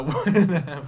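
slow, loud speech laughing through the words.

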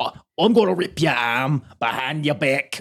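put-on high Australian accent. Retelling a wrestler's promo threat in a put-on accent: imitating Zach Gibson's accent. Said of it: "the little accent that you just did".

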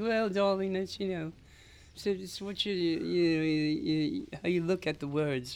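put-on poor British accent, high and slow. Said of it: "I'm terrible at his accent".

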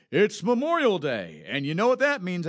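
loud, swooping commercial radio pitchman delivery. Retelling a radio commercial heard while mowing the lawn, in a radio announcer voice. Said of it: "the tone of the announcer's voice".

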